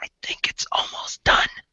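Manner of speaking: soft, breathy whisper. Voicing a gnome who leans over to another character: whispering. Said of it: "he whispers and he says".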